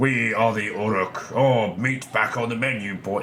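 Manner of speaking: accent of the Midlands. Comparing how orcs should sound, imitating other orcs in a soft Midlands accent. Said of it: "Not that soft Midlands nonsense".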